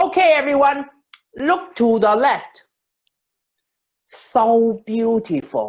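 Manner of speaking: put-on high, loud English with Hong Kong accent.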